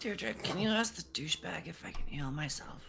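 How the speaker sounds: soft, hushed whisper. A player in a tabletop game asks Deirdre to relay a question, whispering. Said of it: "hear me while I'm whispering?".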